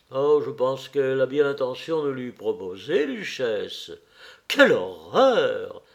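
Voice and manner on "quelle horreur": low, dropped, outright exclamation. A lady reacts to table gossip about a young man's marriage: exclaiming. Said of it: "S'exclama Lady Agathe".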